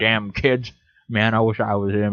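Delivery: ordinary delivery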